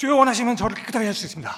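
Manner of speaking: urgent, rushed, very fast and very loud. Demonstrating how to read a Bible verse aloud: very fast and urgent. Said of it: "아주 빠르게".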